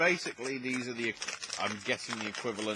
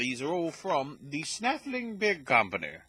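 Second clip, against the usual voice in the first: exaggerated, put-on upper-crust posh accent; 5 semitones higher, 4 dB louder than usual. Introducing the beers, slipping into a posh accent. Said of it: "I don't know why I did that in a posh accent".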